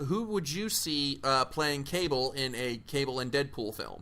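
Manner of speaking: usual speaking voice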